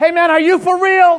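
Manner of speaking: very loud, very high-pitched shout. Retelling one of four young men shouting from across the street, imitating someone shouting. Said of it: "one of them shouted".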